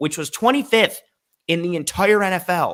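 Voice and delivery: emphatic, loud, high-pitched delivery.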